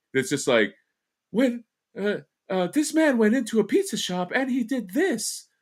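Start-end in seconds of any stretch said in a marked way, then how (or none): 1.3-5.5 high-pitched, ditzy, synthetic female narrator voice. Mocking the ai voices they hate most, doing a female bimbo-sounding voice. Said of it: "female bimbo sounding voice".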